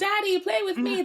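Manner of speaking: put-on very high, squeaky small child voice. Picturing a man's children asking him for attention: imitating his children. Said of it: "I just have this image of, like, his children going".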